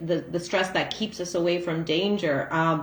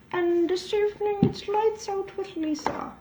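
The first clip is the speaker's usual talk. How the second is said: put-on high-pitched granny voice. Opening her evening reading show, the host speaks in an old lady voice. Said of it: "it's the old lady voice that goes with my spectacles".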